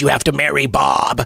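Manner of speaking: otherworldly put-on alien character voice. Retelling a story, voicing the alien in a put-on alien voice. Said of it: "In the alien voice".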